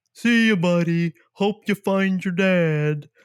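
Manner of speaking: very drawn-out, high, loud voice, "dad" stretched out. Quoting a farewell line from Elf: walrus from Elf voice. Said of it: "It reminded me of the walrus from Elf".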